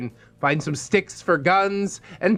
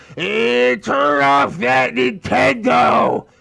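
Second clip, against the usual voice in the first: very slow, rough, rasping mom voice; 4 semitones higher, 4 dB louder than usual. Retelling what a friend's mom shouted when she walked in: imitating a mom's raspy voice. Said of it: "she would say with her raspy voice".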